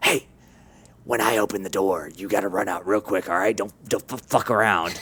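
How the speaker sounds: low, hushed, secretive, voiceless half-whisper. Describing a game, the player tells hostages how to escape, half-whispering. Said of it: "you're whispering like".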